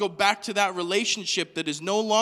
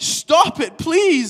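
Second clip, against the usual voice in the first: desperate, shrill, very loud begging shriek; 8 semitones higher, 10 dB louder than usual. Retelling a possessed man's reaction to Jesus, retelling a shriek. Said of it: "He shrieks".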